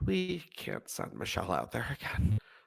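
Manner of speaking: very quiet, resigned voice.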